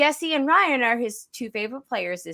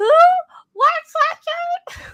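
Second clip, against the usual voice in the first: put-on, loud, very high old woman voice; 6 dB louder than usual. Retelling a moment at a table, the speaker quotes their own reply in an old lady voice. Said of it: "Like old lady voice".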